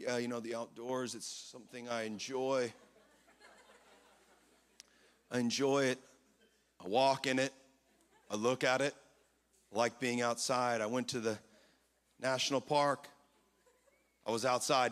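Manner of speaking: very low, dead-level, flat monotone drone. Imitating someone met the other day: imitating a monotone talker. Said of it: "they were talking like this".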